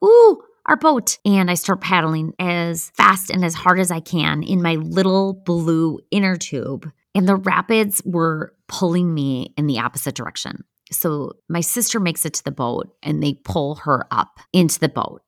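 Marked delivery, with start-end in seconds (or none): 0.0-1.2 very high, loud excited shriek. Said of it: "And I'm like".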